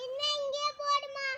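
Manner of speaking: loud, high-pitched shouting.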